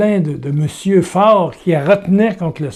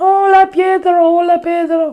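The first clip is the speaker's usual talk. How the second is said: put-on little girl voice, much higher; 12 semitones higher than usual. Retelling what a nine-year-old girl said, in a little girl's voice. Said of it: "Petite voix de petite fille".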